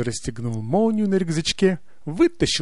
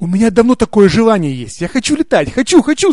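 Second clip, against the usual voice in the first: crying out loudly at full voice; 6 semitones higher, 10 dB louder than usual. The Mouse in the story speaks up, shouting. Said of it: "закричал".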